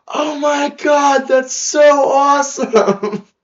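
shrill, very high, loud, booming, drawn-out scream. Retelling screaming back at a girl from the street: retelling own screaming back. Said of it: "both screaming back".

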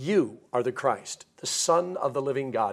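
normal talking voice

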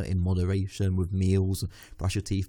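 ordinary talk

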